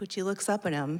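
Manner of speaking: ordinary talk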